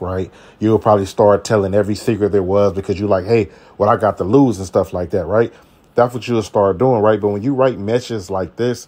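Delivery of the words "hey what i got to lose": ordinary delivery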